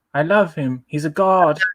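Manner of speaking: high, terrible put-on regal English queen voice. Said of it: "I was doing the Queen of England".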